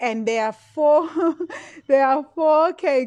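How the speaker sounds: speech breaking into laughter. Talking on a live video, laughing while talking. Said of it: "Sorry, I'm laughing".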